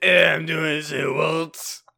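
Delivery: put-on drunk, slurred French accent. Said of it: "Drunk homeless French man".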